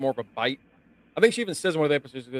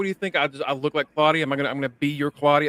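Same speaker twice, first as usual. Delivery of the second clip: angry outburst, heated and forceful. Retelling how a character goes off on him: imitating an angry outburst. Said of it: "she goes off on him".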